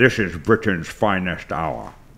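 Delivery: low, deep, slow, deliberate statesman's oration. Doing an impression for others: Winston Churchill impression. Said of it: "Here's my Winston Churchill".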